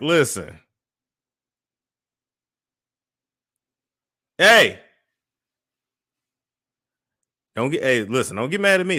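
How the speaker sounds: rising, scolding calling-out voice. Interrupting a conversation with friends to yell at the dog. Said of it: "I'm yelling at the dog".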